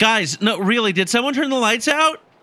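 calling out high and insistent. During a role-played power outage, a player calls to the group: shouting. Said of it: "Can you please stop yelling?".

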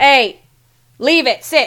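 big booming, loud, commanding man voice. Playing a male character, walking up to give commands, booming, loud voice. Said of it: "I'm going to say in my best, like, booming, loud voice".

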